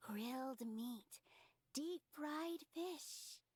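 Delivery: whispering. Whispering into a sleeping companion's ear to wake them, whispering in ear. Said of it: "I'm gonna whisper in your ear".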